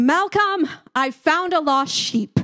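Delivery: high, loud yell as if calling into the distance.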